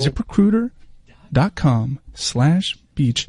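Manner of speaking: very slow, calm, gentle, not yelling. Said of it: "No need to yell at these people".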